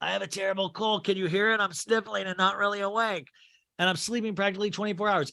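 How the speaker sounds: put-on elderly woman's voice, hushed and soft. Retelling a story, quoting a woman in it, in an old-sounding voice. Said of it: "That's why I'm doing it old".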